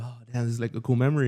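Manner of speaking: usual speaking voice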